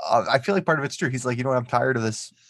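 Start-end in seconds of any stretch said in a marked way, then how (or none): none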